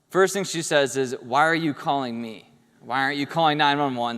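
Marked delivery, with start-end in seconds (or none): 1.2-4.1 mock-angry voice, imitated anger. Retelling mom's first words on the phone after a leg injury, imitating an angry mom. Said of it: "Starts getting angry at me".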